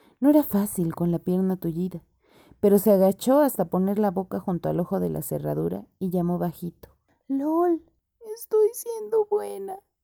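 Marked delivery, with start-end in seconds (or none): 7.3-9.8 tiny, very high, trembling, frightened little voice. Lol answers Nora, who calls softly through the keyhole: scared, trembling little voice. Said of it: "respondió una vocecita asustada y temblorosa".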